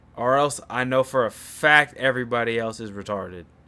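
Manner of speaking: plain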